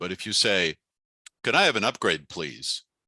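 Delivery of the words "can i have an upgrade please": subtle falling pitch on the word "please". Showing how to ask for an upgrade: voice falling at the end. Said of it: "let your voice come down subtly at the end".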